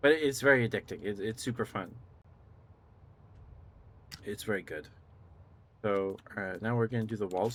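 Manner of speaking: rapid, tumbling, breathless, excited chatter. Describing a game and its difficulty, excited, talking really fast. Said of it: "I'm like talking really fast".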